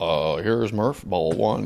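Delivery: put-on deep announcer voice. Describing a friend who sounds like an announcer, speaker does imitating a deep announcer voice. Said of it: "he sounds like an announcer".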